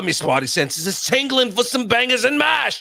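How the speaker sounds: very high put-on South London Cockney, drifting Australian. Discussing an accent that drifted Australian, a host mimics it in a put-on Cockney accent. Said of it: "definitely was South Londoner, some Cockney".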